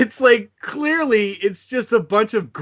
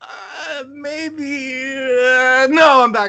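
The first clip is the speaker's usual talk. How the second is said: high, mock-hesitant, teasing backing-off tone. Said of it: "I'll do that little tease thing".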